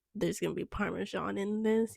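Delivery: plain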